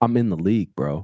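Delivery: acted, scornful, disdainful, frustrated, fed-up tone. Retelling a Mavs player's reply to small talk: imitating disdainful frustration. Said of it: "looked at me with such disdain and frustration".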